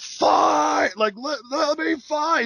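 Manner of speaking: very high, drawn-out, freaking-out scream. Retelling a show segment, imitating Drago screaming. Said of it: "And then he screams out".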